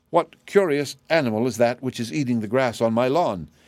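ordinary delivery

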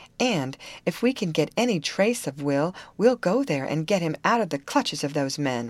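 ordinary talk

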